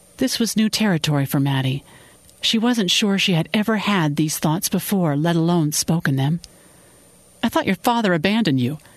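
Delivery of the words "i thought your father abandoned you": quick, defensive, on the back foot. Khan replying to Maddie, who is speaking about her father, defensive. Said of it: "Khan said defensively".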